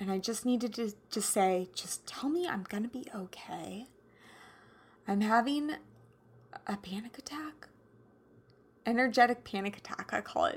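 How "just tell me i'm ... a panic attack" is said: put-on soft, trembling, shaky, quivering voice. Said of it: "I was quivering in my voice".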